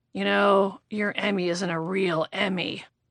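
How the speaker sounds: put-on drunken whisper. Retelling jokes someone whispered in your ear: imitating a boozy whisper. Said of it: "start whispering, like, boozy, stupid, yammering".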